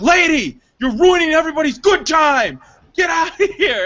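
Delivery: furious, high-pitched, loud angry yelling. Recounting getting up to confront the lady in the theater, retelling own yell. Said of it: "And I yelled at her".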